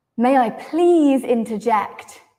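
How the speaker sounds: heavy stress on please. Example of asking to interject politely, with stress on please. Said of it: "if we stress please, it sounds like they are not letting you interrupt".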